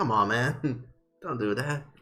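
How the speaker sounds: half-hearted, playful, teasing tone. Voicing a character playfully pushing another away: playful teasing. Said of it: "kind of playfully pushing you".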